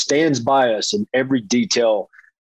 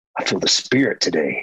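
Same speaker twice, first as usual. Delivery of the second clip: hushed, soft whisper; 6 semitones lower than usual. Retelling what the wife said during worship: retelling a whisper. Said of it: "she whispers to me".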